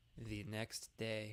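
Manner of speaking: bad, not-quite-right cartoon title narrator voice. Announcing a time skip in a game: SpongeBob narrator voice. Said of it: "to quote the SpongeBob narrator".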